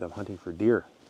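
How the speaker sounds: ordinary talk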